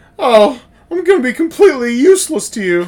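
mock high-pitched, loud, shrill, frightened squeal. Retelling a movie scene where she gets scared: imitating a scared character. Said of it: "when she gets all scared and she goes".

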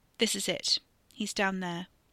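plain reading voice

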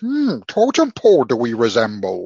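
loud, slow, sing-song voice. Mocking a movie villain's speech outside the court: imitating Tom Hardy as Bane. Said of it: "he sat there".

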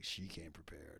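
very soft, hushed, saucy, randy suggestive tone. Retelling the way he said it: mock-randy, suggestive. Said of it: "He said it like kind of randy".

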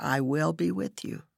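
said softly, gentle delivery. Praying aloud, the speaker quotes the Lord's answer to her cries, said softly. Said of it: "you always say softly".

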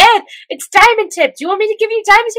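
very high, fast, thrilled fangirling gush. Retelling a scene, quoting Winry: imitating someone fangirling excitedly. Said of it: "freaks out and fangirls over that auto mail".

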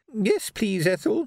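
small, tiny, high, trembling, frightened quavering voice. Mrs. soupson answers ethel from amid a crowd of armed men, quavering, tiny frightened voice. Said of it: "quavered a tiny, frightened voice".

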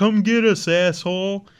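put-on yelling.

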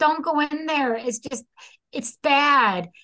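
desperate, high, urgent screaming. Retelling a girl's warning at the bedroom door: imitating someone screaming. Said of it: "Patty screams, like".

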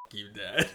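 put-on, acted whisper. Retelling a man whispering to his dad, acting out the whisper. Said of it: "he whispers".

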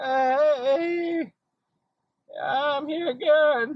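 acted, aching, very high, very slow, pained voice. Retelling what another woman said, imitating a pained voice. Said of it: "You could just hear the fucking pain in her voice".

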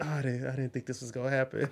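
put-on whisper. Retelling what a woman said during an encounter, imitating someone whispering. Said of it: "she was whispering".

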